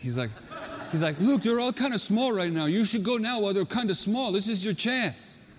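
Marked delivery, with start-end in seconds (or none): 1.2-5.4 put-on Hawaiian accent, slowing on the last words. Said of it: "in this Hawaiian accent".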